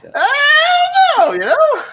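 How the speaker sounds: the "I" stretched out and screeched high. Performing a requested three-second impression for the others: Charlie Day impression. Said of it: "I do a three-second Charlie Day impression".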